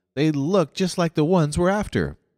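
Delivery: gentle, mild, very high-pitched protesting tone. One of the puzzled recruiters protests mildly to his superior. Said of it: "one of them protested mildly".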